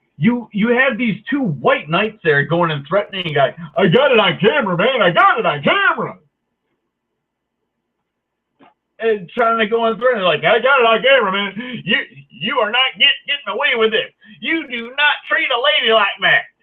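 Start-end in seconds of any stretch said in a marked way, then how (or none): 3.8-16.4 put-on Appalachian mountain accent, pitched high. Retelling two men threatening a guy on camera, in a put-on Appalachian accent. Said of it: "I made them sound like they're from like Appalachia".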